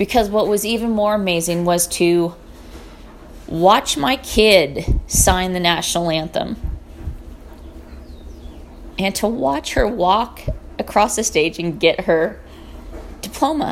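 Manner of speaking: voice catching and breaking with emotion. Parent recalling watching their kid graduate, choked up. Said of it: "getting choked up".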